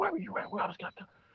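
put-on under-breath fussing. Retelling how she fussed at the husband, imitating fussing under breath. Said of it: "She's fussing at him... under her breath".

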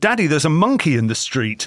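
ordinary talk

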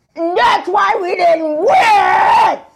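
put-on shrill, drunken screaming, very high and very slow. Retelling what a wasted stranger was doing an hour later, imitating someone screaming. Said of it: "like screaming".

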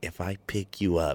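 very soft, low, deepened, hushed mother voice. Recalling Mom's conditions for picking her up from school, imitating Mom's low voice. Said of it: "and she'd do the low voice".

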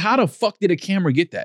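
ordinary talk

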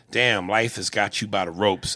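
ordinary delivery

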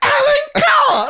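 acted, very high, frenzied, frantic calling out. Retelling how a man kept repeating a name: imitating someone going mad. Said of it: "going mad".

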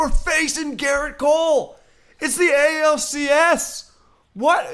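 very high, very slow, drawn-out screaming. Retelling a fan at the stadium urging everyone: imitating a fan screaming. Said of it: "He's just screaming".

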